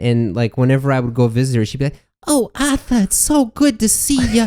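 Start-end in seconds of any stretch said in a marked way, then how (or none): 2.3-4.5 put-on very high, super thick grandmotherly Saugus accent. Retelling a grandmother's greeting on a visit: imitating grandmother's thick accent. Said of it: "super thick accent".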